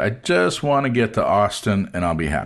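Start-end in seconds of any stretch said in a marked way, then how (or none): none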